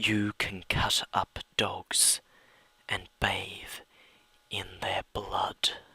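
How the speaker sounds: slow, soft, eerie whisper close to the ear.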